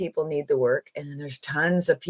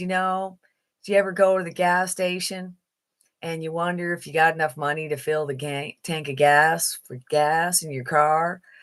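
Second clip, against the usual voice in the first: plain, level, flat southern US monotone. Speaker imitates how an older man talks, Jimmy's monotone Southern voice. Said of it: "he's very monotone, plain Jane as they come from southern somewhere in the States, and he kinda talks like this".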